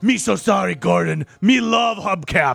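rasping voice, high-pitched and rough. Retelling a movie scene, the speaker voices Cookie Monster answering Gordon: Cookie Monster voice. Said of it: "And Cookie Monster in it".

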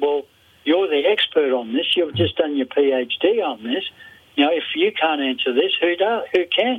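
plain

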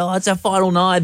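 high-pitched, excited, gushing chatter. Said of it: "Everyone's so excited".

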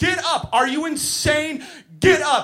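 high, loud, frantic, furious yell.

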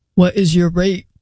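put-on horny dude voice. Reading out a chat message from a guy: put-on guy voice. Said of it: "That's my guy voice".

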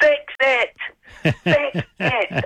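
frantic, shrill scream, very high and drawn out. A former new roadie retells Jimmy turning around on stage over broken gear, imitating someone screaming. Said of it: "he's screaming".

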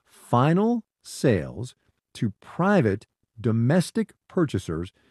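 very slow, drawn-out delivery.

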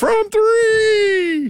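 squeaky, very high announcer voice, three stretched. Imitating how he announces a shot at the game, in a high-pitched PA announcer voice. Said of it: "he's got a real high-pitched voice".

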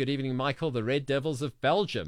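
ordinary talk, nothing marked

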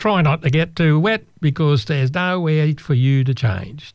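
put-on tour guide voice with a Canadian accent. Retelling the bus tour guide's warning before the boat ride, in a canadian accent. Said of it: "That's my Canadian accent".

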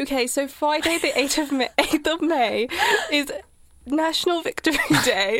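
put-on posh, upper-class British accent. Taking up the other speaker's suggestion, announcing the date in a posh british accent. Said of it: "Should we just do it with like a posh British accent?".

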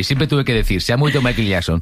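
ordinary delivery

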